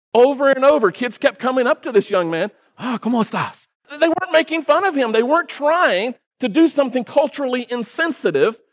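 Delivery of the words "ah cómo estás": put-on Spanish spoken with a Chinese accent. Retelling how kids kept greeting a young man, Spanish with Chinese accent. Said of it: "with a Chinese accent".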